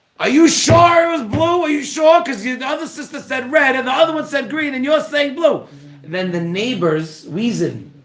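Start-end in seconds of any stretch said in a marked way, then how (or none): 0.2-5.7 mock very high-pitched, shrill screaming. Retelling questioning the third kid outside: imitating himself screaming. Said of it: "I'm screaming".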